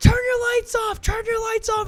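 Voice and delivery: frantic shouting, very high and very loud. Retelling how they yelled at two players walking toward them: retelling a yell. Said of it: "We just start yelling at him".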